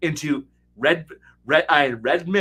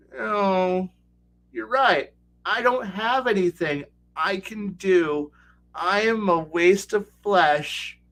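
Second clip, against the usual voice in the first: slow, beaten, hopeless and defeated delivery; 4 semitones higher than usual. Acting out a fighter who gives up against the Marilith: voicing a defeated fighter. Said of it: "And your fighter and paladin go".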